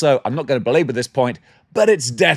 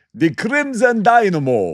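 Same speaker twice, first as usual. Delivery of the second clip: rough put-on Russian accent, pitch swooping high; 7 semitones higher than usual. Speaking to viewers, repeating a name in kind of a Russian accent. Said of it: "That was kind of a Russian accent".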